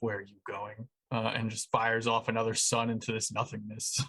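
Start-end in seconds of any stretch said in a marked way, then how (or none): 0.0-0.9 soft half-whisper under the breath. Narrating a character's line during a game battle, half-whispering to himself. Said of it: "just kind of whispers to himself".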